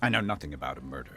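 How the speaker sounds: fast, snappy, terse, short delivery.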